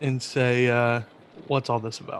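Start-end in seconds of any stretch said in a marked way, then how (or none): 1.5-2.2 hushed, whispered goblin voice, said aside. Whispering a question to a goblin in goblin speak: whispering in goblin speak. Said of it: "I whisper to him in goblin speak".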